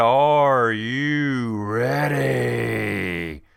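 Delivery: put-on wrestling ring announcer hype, "ready" drawn out. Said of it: "Little D X there for you".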